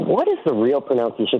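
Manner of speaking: ordinary talk, nothing marked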